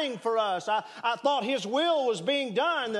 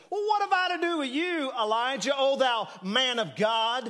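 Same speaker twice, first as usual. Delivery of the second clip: mock biting, sneering, sarcastic, cutting tone. Re-voicing a grieving widow's words to the prophet: imitating a sarcastic remark.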